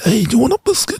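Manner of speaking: very high-pitched, put-on mob boss accent. Imagining a contestant offering a biscuit in the kitchen: Godfather accent. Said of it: "a kind of Godfather accent".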